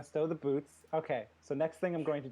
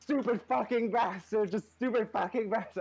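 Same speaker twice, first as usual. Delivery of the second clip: high, raging screams, over and over; 7 semitones higher, 5 dB louder than usual. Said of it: "I'm just yelling".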